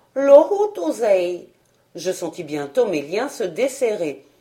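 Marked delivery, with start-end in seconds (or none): 0.1-1.4 astonished, amazed, wondering tone at a raised pitch. Ugly dwarfs repeat the prisoner's strange words back, astonished. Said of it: "d'un air étonné".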